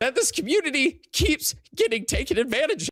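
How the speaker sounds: high-pitched, tearful speech broken by sobs. Speaking to his community, genuinely upset and out of breath, crying while talking. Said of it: "he's crying".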